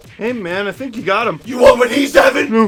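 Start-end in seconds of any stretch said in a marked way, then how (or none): 1.4-2.7 very loud, full-force bellow, superhero style. Host hyped after a Leafs win acts out a bit, Batman voice. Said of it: "*BATMAN VOICE*".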